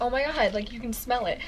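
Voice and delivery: ordinary delivery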